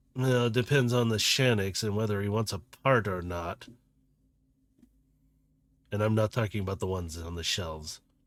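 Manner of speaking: scornful sneer. A vendor bot tells customers about its parts, sneering. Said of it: "And he's kind of sneering".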